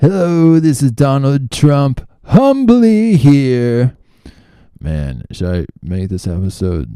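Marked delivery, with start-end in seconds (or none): 0.0-4.0 shrill, very high, booming, loud, with "here" drawn out. Quoting a begging YouTube ad: Donald Trump impression. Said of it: "practicing my Trump impression".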